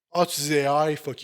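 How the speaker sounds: ordinary talk, nothing marked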